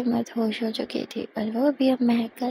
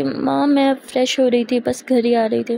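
usual speaking voice

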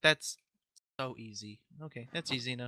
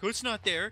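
high-pitched, snippy, mocking tone. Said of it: "you were getting snippy".

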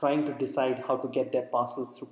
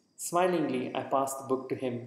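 usual speaking voice

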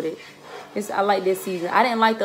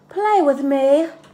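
loud, high, babyish put-on voice; 6 semitones higher, 5 dB louder than usual. Retelling what a grown man said when he came out, in a baby voice. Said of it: "With this baby voice".

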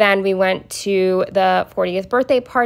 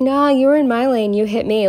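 put-on drunk man voice, higher; 5 semitones higher than usual. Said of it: "who was clearly drunk".

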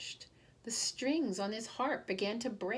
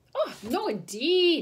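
mighty alarmed cry, high and loud; 6 semitones higher, 7 dB louder than usual. Old Pat replying to the leprechaun, alarmed cry. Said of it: "cried old Pat, mighty alarmed".

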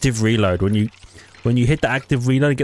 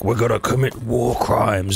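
rough, gravelly put-on voice; 2 semitones lower than usual. Imitating what John DiMaggio says in a game: gruff John DiMaggio voice. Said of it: "He's gonna say some things in his gruff voice".

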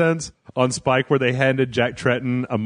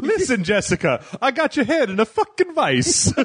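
very high character voice with big pitch swoops; 11 semitones higher than usual. Picturing Mario acting like a movie mobster: Mario doing Joe Pesci. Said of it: "Mario doing the stuff, uh, Joe Pesci in Casino".

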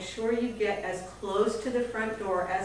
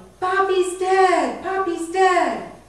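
high, loud, slow yell. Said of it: "Mommy's yelling".

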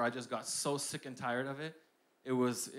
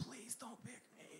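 very soft, breathy, barely voiced whisper; 10 semitones higher, 17 dB quieter than usual. Retelling begging the history teacher during class reading: retelling a whisper. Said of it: "And I was whispering".

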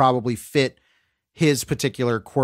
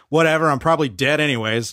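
mock expressionless, dead-level, flat deadpan delivery; 2 semitones higher than usual. Quoting a film character pouring a drink: imitating Kathleen Turner's deadpan delivery. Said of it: "Kathleen Turner's deadpan delivery on that".

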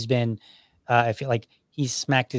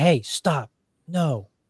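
put-on raised voice, much slower; 4 semitones higher than usual. A parent retells how he spoke to his two-year-old, retelling raising his voice. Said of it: "I would raise my voice".

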